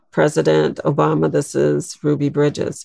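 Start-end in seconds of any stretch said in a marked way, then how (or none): none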